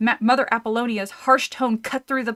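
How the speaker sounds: plain reading voice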